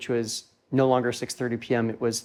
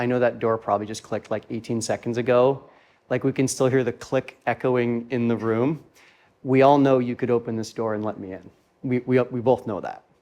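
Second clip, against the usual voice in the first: ordinary talk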